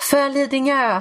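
sudden, high, shrieking screamed outburst. Retelling a friend's reaction when a character dies, retelling a friend's shout. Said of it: "då bara skriker min kompis så här".

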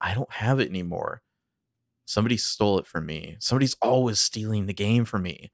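trembling, unsteady, quavering, nervous voice. Voicing Mona as she leans in to speak, quavering voice. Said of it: "Her voice is kind of quavering".

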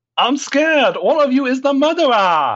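put-on French accent, pitched very high. Playing a character in a murder game, saying one is the murderer: French accent. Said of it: "That was your French accent".

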